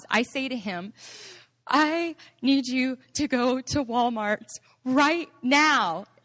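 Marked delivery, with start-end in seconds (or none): 1.7-6.0 slow speech pushed out between sobs. Recalling the wedding night in the restroom, retelling speaking through sobs. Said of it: "through my sobs".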